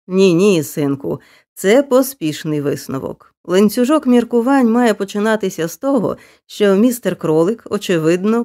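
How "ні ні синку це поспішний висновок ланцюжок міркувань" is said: usual speaking voice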